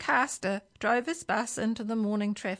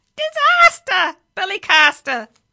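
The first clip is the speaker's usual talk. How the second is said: very loud, shrill, squawking parrot screech; 9 semitones higher, 12 dB louder than usual. A narrator reads the parrot's line in a story: screeching parrot. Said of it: "it screeched".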